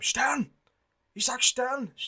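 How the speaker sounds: mock, very high calling shout of a name. Retelling a film scene where Schindler runs along a train; retelling a shouted name. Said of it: "just shouting his name".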